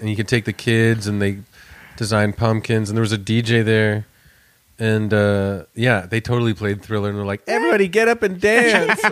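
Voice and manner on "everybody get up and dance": ordinary talk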